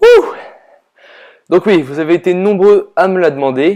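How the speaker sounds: out of breath with audible gasps for air.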